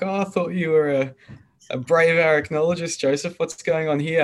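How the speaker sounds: put-on, high, teasing tone through laughter. Retelling a woman teasing him after a spider scare: imitating Barbara laughing. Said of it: "she was laughing at me".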